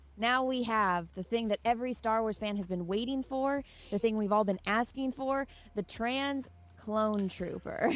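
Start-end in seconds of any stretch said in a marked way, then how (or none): none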